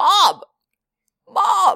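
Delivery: high, froggy, frog-like croak, over and over. Imitating him calling 'Mom' over and over: a croaking-frog 'Mom'. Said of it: "It's like a frog".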